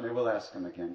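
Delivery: normal talking voice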